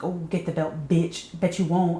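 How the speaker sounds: acted angry, aggressive, goading taunting tone. Retelling a scene, the speaker acts out a character's comeback: retelling an angry taunt. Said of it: "Jessica starts getting real angry about that".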